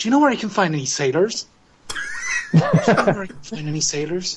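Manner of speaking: swooping, sing-song voice, pitch swinging up and down. Quoting a famous video game line: Ryo Hazuki impression. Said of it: "That's what Cory used to sound like".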